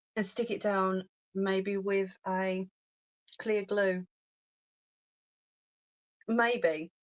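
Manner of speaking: talking interrupted by hiccups. Explaining a step to viewers in a video, speaking with hiccups. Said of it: "got hiccups".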